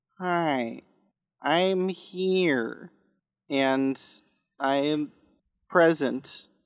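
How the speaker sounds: slightly put-on alien voice. Introducing the crew, the speaker gives DB Wells's line, slipping a little into a Ferengi voice. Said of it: "You've also turned into a Ferengi there a little bit".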